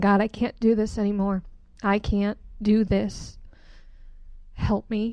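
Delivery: weeping, sobbing through tears. Retelling praying on knees in the bedroom: retelling own sobbing prayer. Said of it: "sobbing, going".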